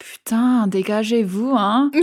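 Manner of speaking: mock, put-on muttering under the breath. Retelling what a man behind them in line said, imitating a mutter under breath. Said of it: "he's sort of under his breath".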